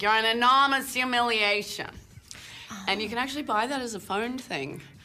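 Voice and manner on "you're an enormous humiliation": put-on loud Boston accent. Recalling playing Johnny Depp's mother in a film: Boston accent. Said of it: "I played Boston. I was like, ... It's me doing my Boston voice".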